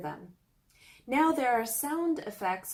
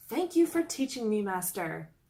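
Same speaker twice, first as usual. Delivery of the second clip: ordinary talk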